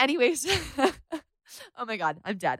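soft, very slow words spoken through laughter. Apologizing to listeners after crying into the mic: laughing while talking. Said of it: "I'm laughing".

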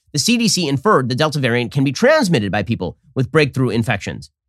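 normal talking voice

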